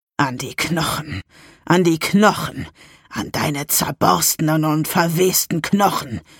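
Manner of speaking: sinister, dark, slow hissing voice. Narrating a story, voicing the dark voice hissing in the narrator's head, dark hissing voice. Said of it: "Eine finstere Stimme in meinem Schädel fauchte".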